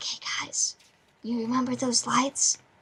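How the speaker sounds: speaking very softly and quietly. Describing how they'd wake up the others, speaking very quietly. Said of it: "very quietly be like".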